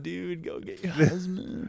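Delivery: soft California surfer-dude voice. Retelling the story of Jesus and a woman, in a California surfer Jesus voice. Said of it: "with the California surfer Jesus eyes".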